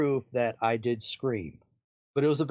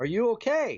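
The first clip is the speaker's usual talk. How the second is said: high-pitched, put-on call; 8 semitones higher than usual. Retelling a man yelling up from downstairs, retelling someone's yell. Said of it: "I hear him yell from downstairs".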